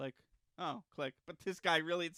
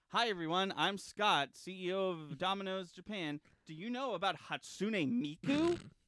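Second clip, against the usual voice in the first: put-on very strong, played-up, all-out American accent; 3 semitones higher than usual. Describing a Domino's Japan ad, the speaker imitates Scott, very American.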